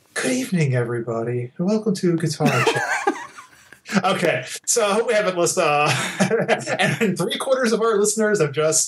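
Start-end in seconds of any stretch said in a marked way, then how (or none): 0.1-3.1 silky, smooth easy-listening radio DJ delivery. Opening a pretend radio show called Guitar Chat: smooth radio voice. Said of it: "We'd have to have that smooth radio voice".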